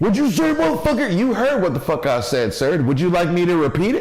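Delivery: put-on cocky, swooping, drunk-sounding voice swung wide. Retelling facing a tall man: imitating own overconfident Hennessy self. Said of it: "that's me off the Hennessy".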